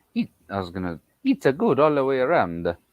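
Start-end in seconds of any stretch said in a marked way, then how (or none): 1.3-2.8 slipped-in Italian accent. Speaker agreeing with a conversation partner, slipping into an accidental italian accent. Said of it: "that sounds so Italian".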